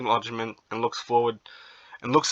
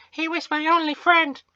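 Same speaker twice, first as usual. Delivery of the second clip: put-on comic girl voice, much higher, louder; 4 dB louder than usual. Voicing two characters in a skit, the speaker plays the girl in a funny girl voice. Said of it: "I was trying to find a funny girl voice".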